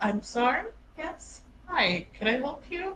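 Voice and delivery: jumpy, startled, flustered, caught off guard. Voicing a character who jumps when a stranger addresses her: startled and flustered. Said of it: "she still jumps".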